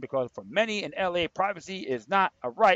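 ordinary talk

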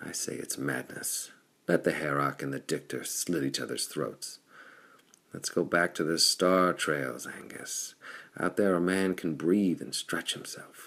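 ordinary delivery, nothing marked

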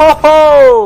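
loud, high, gleeful cheer.

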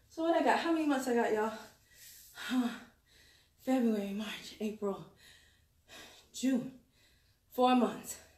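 out of breath. Counting the months left until forty right after a workout, out of breath. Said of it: "I'm out of breath for real".

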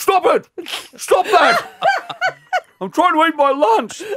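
play-acted shrill, loud talk through a full mouth. Speaker retelling a man scolding the class while eating, imitating talking with a mouthful. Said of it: "with a mouthful of banana".

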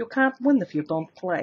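put-on Russian-sounding woman's accent. Quoting an old lottery commercial's line: Russian-sounding woman's accent. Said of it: "this sort of Russian-sounding woman who would say".

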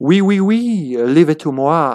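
fake, put-on French accent. Voicing a character who will charge in, in a fake french accent. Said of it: "I got to switch accents on the fly".

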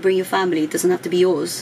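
ordinary talk

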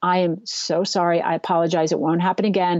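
shaken, shaky, trembling voice. Retelling the apology to the executive: retelling own shaken apology. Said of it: "And I was just shaking".

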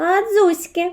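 jeering, mocking, high squeal. A mouse in its burrow answers the little one's order to come out; mocking squeal. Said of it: "глузливо верескнула мишка".

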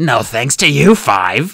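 growl full of anger. Narrator reads a character growling back after being greeted, growling. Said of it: "Kestrel growled".

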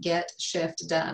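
very slow, deliberate enunciation, each word drawn way out. Speaker naming another resource, saying it very, very slowly. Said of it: "that I have to say very, very slowly".

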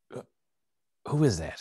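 hushed whispering voice. Asking in character who is talking on the other side: whispering. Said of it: "I'll whisper like".

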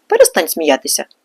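stern, severe, low, no-nonsense voice. Narrator reads the kudlatar speaking to a laughing Hrytsyk, sternly. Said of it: "суворо сказав кудлатар".

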